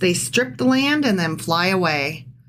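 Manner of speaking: plain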